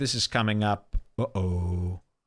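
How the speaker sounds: normal talking voice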